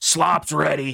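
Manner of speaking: big, booming, rough, high-pitched yelling call. A voice calls the crew to dinner as a little bell rings, booming yell. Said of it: "a booming voice uh, just yell out".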